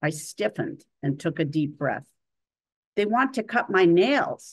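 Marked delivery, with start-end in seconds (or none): 2.9-4.5 hissed out sharply, loud and shrill. Reading a first-person story aloud, voicing the woman speaking to the narrator, hissing. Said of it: "she hissed".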